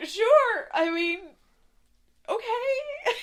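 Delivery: on the verge of tears, very high and loud. Voicing a maid in a story after being asked permission to pass, on the verge of tears. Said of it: "She looks like she's on the verge of tears".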